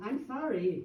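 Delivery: normal talking voice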